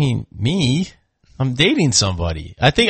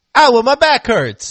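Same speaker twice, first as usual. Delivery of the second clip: put-on Italian accent, pitched very high; 10 semitones higher, 4 dB louder than usual. Speaker imagines what an Italian Entz would sound like: mock Italian Entz voice. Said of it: "what would an Italian Entz sound like?".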